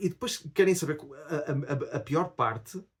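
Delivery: halting, stammering speech, very slow. Talking to the audience about too many things at once, stammering. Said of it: "eu até estou a gaguejar".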